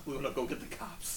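soft, low, quiet, hushed whisper.

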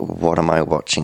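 ordinary delivery

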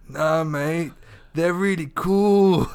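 put-on high, slow, dragged-out stoner drawl.

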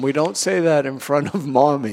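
ordinary delivery

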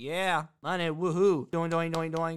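put-on deadpan, dry, unenthusiastic voice. Describing a game show contestant's reaction, imitating John, dry and unenthusiastic. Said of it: "he just has a very dry personality".

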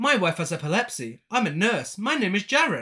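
stiff, mechanical robot voice. Mocking a show's dialogue, retelling a character's lines as Jaren talking like AI. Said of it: "Jaren speaks like he's AI".

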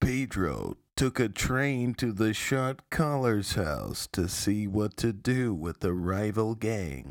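low, documentary-style narrator voiceover voice. Pitching a show idea, voicing its narrator's line in narrator voice. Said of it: "have the narrator be like".

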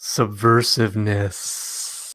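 lascivious, suggestive, lewd-sounding tone. In a discussion about hiring rule-breakers, saying the word in a salacious tone. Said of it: "You said that like a".

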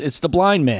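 shouting. Telling a joke, voicing a man at the door: yelling. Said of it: "A man yells".

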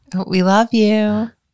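unconvincing, insincere affection, high and drawn out. Saying goodbye to listeners after being prompted: insincere. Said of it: "sounded very insincere".

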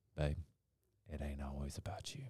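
very soft, hushed, low, quiet voice. Retelling what she tells him as she passes by, real quiet. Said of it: "she'll say real quietly".

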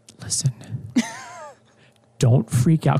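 hushed, soft, close whisper. Retelling what she said while holding hands face to face: imitating a whisper. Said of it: "whispering to me".

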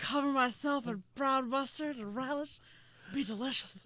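mock elderly sports announcer voice. Joining the bit with a Harry Caray impression. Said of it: "doing an impression of somebody doing an impression of Harry Carey".

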